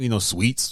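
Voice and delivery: normal talking voice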